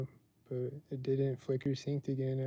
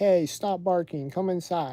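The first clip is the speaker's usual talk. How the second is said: loud, slow, stern scolding tone. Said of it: "they're like".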